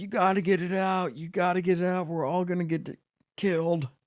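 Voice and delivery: acted-out piercing, very high, shrill scream. Retelling a panic as others lit an animal: retelling own screaming. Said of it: "I was screaming at these guys".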